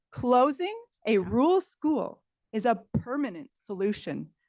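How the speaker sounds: booming, loud, slow, deliberate, swooping delivery. Repeating a line for someone who cannot hear well: a little louder. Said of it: "A little louder this time".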